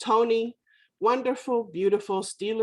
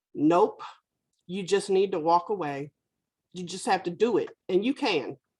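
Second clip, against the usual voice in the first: mock firm, stern but caring, kindly tone. Recounting a man's reply after he said he was trying; retelling a stern but caring voice. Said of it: "he said in a stern but caring voice".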